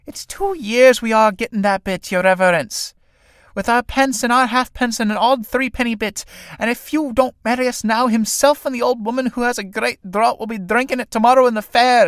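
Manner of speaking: high, whining, begging, pleading voice. Sarah speaks to the priest in the play, whining. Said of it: "Synge, a story of two young tinkers trying to con a travelling holy man into marrying them, all while their mother is constantly trying to satiate her indomitable thirst for drink, thereby inadvertently causing more prob".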